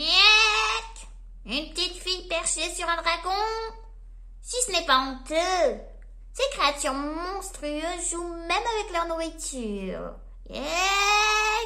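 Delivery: high, loud, hoarse, raspy eagle squawk. Reading a story aloud, voicing the eagle overhead in a raspy eagle voice. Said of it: "se fit entendre une voix rauque".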